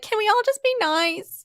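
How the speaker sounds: put-on very high, childlike little-kid voice. Imitating own pleas for a kinder fandom: sounding like a nine-year-old. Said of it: "I sound like a nine-year-old who's just like".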